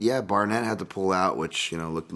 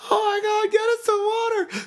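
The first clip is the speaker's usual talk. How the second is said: put-on very high, loud woman's voice; 6 dB louder than usual. Recapping a show where a pit bull is found, the speaker quotes someone there: mock female voice. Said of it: "My offensive female voice there".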